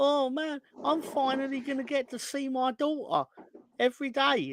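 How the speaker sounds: weepy, high, tearful voice, sobbing through words. Retelling a wrestler's fake retirement promo, imitating him crying. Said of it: "that motherfucker was sat there crying, like".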